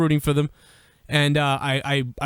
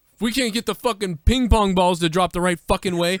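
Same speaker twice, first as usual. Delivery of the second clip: put-on yelling, screaming, higher; 4 semitones higher than usual. Retelling screaming at a team boss in a video: retelling screaming at someone. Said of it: "I remember screaming at him in a video".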